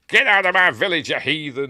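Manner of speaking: put-on shouted Irish accent. Describing a scene where Frank Finlay bursts out shouting, in Frank Finlay's Irish accent. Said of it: "In his Irish accent".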